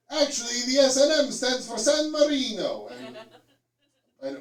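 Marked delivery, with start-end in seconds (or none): 0.1-2.8 man's voice, slow, loud put-on Italian accent. Guessing what the S and M stands for, in an Italian guy impression. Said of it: "my impression of an Italian guy".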